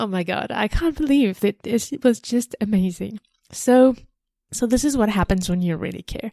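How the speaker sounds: tearing up mid-sentence, choked-up tearful voice. Sharing a story with viewers, tearing up. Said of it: "I'm still tearing up on this".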